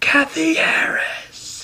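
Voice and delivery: very high, shrill, outraged, furious scolding. Retelling how the teacher came back and scolded kathy: imitating an angry teacher. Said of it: "So mad".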